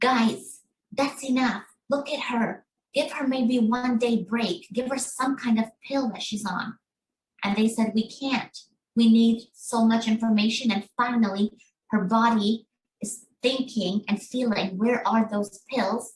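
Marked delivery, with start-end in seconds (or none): 0.0-6.8 angry, protesting yell. Speaker acts out her father telling them to stop; retelling a yell. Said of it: "and he was yelling".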